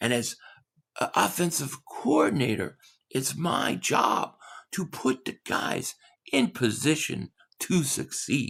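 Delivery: asmr-style whispering coach voice. Doing a requested KP impression: whispering ASMR coach impression. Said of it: "he whispers and he's like A S M R coach".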